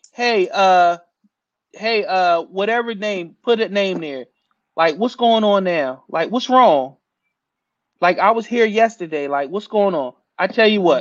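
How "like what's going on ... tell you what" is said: ordinary talk, nothing marked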